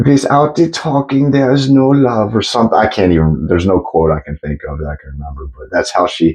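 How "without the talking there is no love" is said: put-on German-accented tiny grandma voice, higher pitch. Imitating a famous sex therapist's voice: Dr. Ruth impression. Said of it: "she sounded just like a tiny little grandma".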